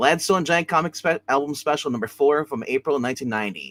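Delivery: ordinary delivery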